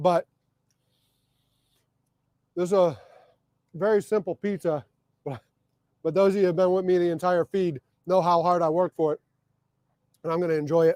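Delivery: munching while talking, mouth full. Speaker eating pizza while talking to viewers on a live feed, talking while chewing. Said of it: "I know I'm munching in your freaking ear".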